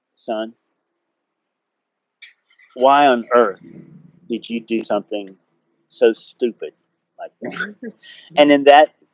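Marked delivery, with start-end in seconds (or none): 0.1-7.9 forced, acted, as-calm-as-possible voice. Retelling what a man said after sitting down next to him: retelling a forced calm voice. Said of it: "in the most calm voice that he could muster".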